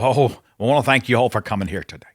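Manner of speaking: acted pulpit preacher delivery. Showing the preacher voice he says he wouldn't use, put-on preacher voice. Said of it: "the preacher voice".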